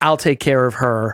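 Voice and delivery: ordinary talk, nothing marked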